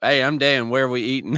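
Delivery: Southern dialect accent. Role-playing an introduction as the other speaker suggested, in a southern accent. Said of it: "have to use the southern dialect".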